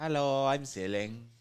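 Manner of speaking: put-on snobbish British accent. Voicing a person named Ceiling who is from Britain: British accent. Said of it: "he's from Britain".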